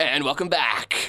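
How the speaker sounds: loud, put-on radio announcer delivery. Demonstrating their announcer voice: radio announcer voice. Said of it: "I gotta do my announcer voice. Like, listen".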